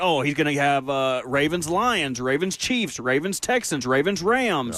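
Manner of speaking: ordinary talk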